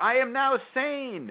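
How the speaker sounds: high-pitched, slow, yelled proclamation style.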